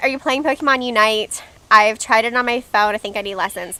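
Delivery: ordinary delivery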